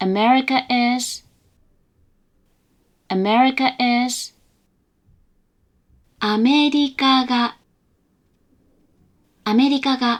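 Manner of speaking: level, unvarying robot-like monotone pitch. Explaining Japanese pitch accent, demonstrating words in flat monotone pitch. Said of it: "quite monotone or even, in some circumstances, robot-like".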